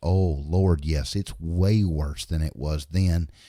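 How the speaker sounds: slow, deliberate, drawn-out, unhurried speech. Retelling a conversation, the speaker quotes a man's reply, imitating a slow talker. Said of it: "and he talks real slow".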